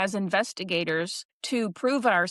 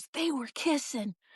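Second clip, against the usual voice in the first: faint, high, hushed half-whisper; 5 semitones higher, 6 dB quieter than usual. Retelling a recorded ghost voice: imitating a half-whisper. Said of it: "Someone whispers".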